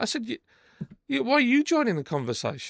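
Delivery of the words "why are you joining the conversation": put-on angry tone, higher. Retelling his own retort to a man who keeps giving him a warning: retelling an angry retort. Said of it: "And I'm mad".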